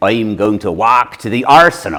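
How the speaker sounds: West Country English local accent. Explaining how people in the West Country speak, demonstrating a West Country accent. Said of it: "if you were from the West Country".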